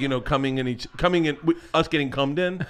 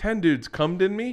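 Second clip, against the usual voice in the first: normal talking voice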